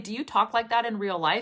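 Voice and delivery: plain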